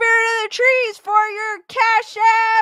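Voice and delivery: cracking voice. Thanking a supporter for a Cash App donation: voice cracking. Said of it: "as my voice is cracking".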